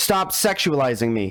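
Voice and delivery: imitated scream. Retelling what a performer says to a compliment: imitating a scream. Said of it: "Then she screams".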